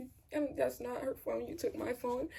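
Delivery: ordinary delivery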